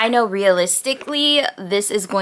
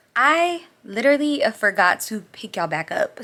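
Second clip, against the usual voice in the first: usual speaking voice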